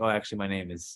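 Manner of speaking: plain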